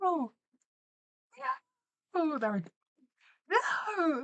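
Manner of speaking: high-pitched screaming in dismay. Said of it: "they're screaming like".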